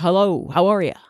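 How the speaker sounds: put-on rubbery comedian voice. Showing the put-on voice used to sound like a comedian. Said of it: "an affectation I put on sometimes when I wanna sound like Jim Carrey".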